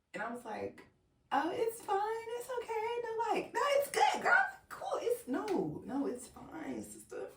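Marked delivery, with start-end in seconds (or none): 1.3-7.3 play-acted very high, teary, swooping voice. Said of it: "so I'm teary".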